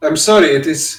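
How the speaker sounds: clumsy fake Spanish accent. Voicing a character in a group scene, bad spanish accent. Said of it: "I don't know how to do a Spanish accent".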